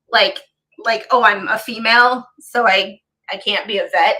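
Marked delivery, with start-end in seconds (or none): none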